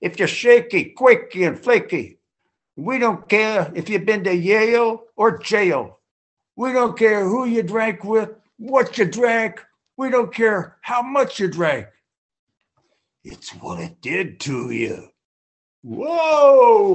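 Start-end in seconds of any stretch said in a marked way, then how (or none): 0.0-15.1 higher, Boston-tinged Irish brogue. Retelling what a newspaper worker from Stockton said, in Virgil Green's Irish Boston brogue. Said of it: "in his Irish Boston brogue".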